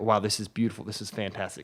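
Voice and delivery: ordinary talk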